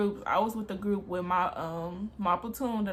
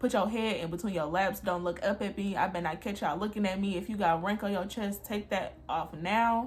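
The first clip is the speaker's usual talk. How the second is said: normal talking voice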